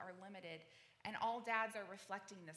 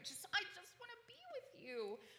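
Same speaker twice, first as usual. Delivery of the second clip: put-on sweet little child voice, much higher; 12 semitones higher than usual. Speaking on prayer, the speaker voices a needy child, little sweet child voice. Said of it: "this little sweet voice".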